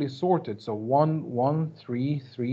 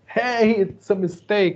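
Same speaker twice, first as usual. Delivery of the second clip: acted, loud, pitched-up screamed outburst; 6 semitones higher, 5 dB louder than usual. Imagining later viewers of this video yelling at the screen, imitating viewers screaming. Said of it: "they are just screaming at the screen like".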